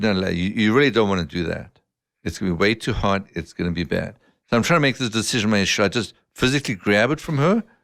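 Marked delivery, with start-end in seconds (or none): none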